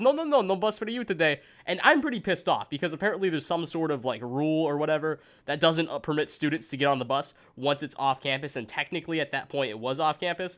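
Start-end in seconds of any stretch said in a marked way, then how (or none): 0.0-1.4 put-on Indian accent, higher and slower. Retelling a bus driver refusing the speaker a ride, in an imitated Indian accent. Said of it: "I just did an Indian accent".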